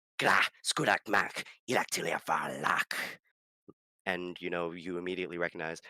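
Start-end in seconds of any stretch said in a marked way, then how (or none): 0.2-3.0 loud, slow, deliberate goblin voice. Retelling a game scene, voicing a goblin behind a door: goblin voice. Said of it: "I know your goblin voice".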